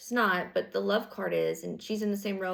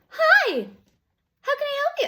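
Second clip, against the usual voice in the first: very high, very loud, sugary, fake-sweet voice; 9 dB louder than usual. Imitating someone answering the phone mid-argument: imitating a fake nice voice. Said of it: "when people do their pretend nice thing".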